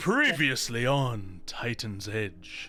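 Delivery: deep, swooping, dramatic recap announcer voice. Opening a recap of the previous episode, a host uses a dramatic voice. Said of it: "a more dramatic voice".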